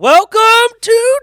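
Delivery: blaring, very loud, high-pitched voice. Starting the podcast intro, a little too loud: really loud. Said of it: "sorry, that was really loud".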